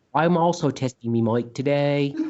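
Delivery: clumsy, bad, put-on British Cockney accent. Doing a mic sound check on a Skype call, in a bad British accent. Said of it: "Is that Australian?".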